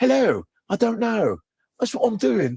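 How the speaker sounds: put-on British accent, plain everyday speech. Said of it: "when you have a British accent".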